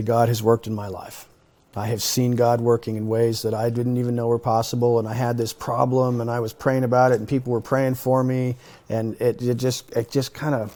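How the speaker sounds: ordinary talk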